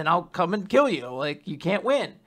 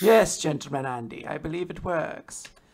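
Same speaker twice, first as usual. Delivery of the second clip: distinguished gentleman voice; 2 semitones lower than usual. Imagining how a collar character might sound: distinguished Clothy voice. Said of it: "distinguished voice".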